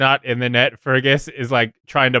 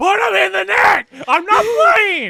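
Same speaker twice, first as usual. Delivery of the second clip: shrill, very high, loud hollering shout; 3 dB louder than usual. While Cookie is talking, retelling what Fergus shouts, retelling Fergus shouting. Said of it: "Fergus is just shouting like".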